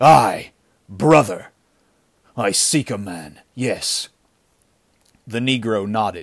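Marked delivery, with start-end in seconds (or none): 0.0-4.1 loud, snarling delivery. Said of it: "Kane snarled".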